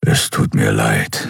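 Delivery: rough, low, slow, rumbling grumble. He apologizes to the weeping woman clinging to his fur, grumbling. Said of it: "brummte er".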